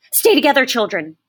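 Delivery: urgent, frantic, high-pitched cry. Narrator reads a mother calling to her children from over the gate, frantic. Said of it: "She sounded frantic".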